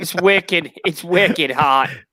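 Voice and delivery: unconvincing put-on Boston accent. Complaining about the heat, trying a Boston accent. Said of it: "that didn't sound anything Boston related".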